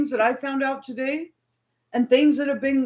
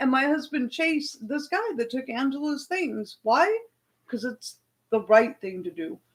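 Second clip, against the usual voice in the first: usual speaking voice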